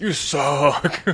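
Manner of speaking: big, hearty, full-on delivery. Quoting a line delivery the speaker finds funny, imitating a deep hearty delivery. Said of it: "so deep and like hearty".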